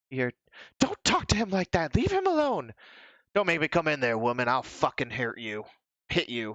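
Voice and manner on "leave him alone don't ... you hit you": put-on menacing, bullying, aggressive tone. Acting out what you hear, someone threatening a woman, acting aggressive. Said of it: "I'm not good at being aggressive".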